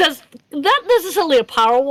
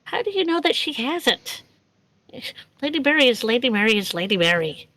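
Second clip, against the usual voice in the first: very quiet, hushed, discreet, understated delivery; 5 dB quieter than usual. Voicing Rags answering a voice in the ear: speaking very quietly. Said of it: "Rags says very quietly".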